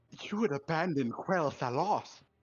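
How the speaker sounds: put-on upper-class British voice. Describing a cinematic, imitating Sylvanas's fake British voice. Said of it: "doing that fake British voice".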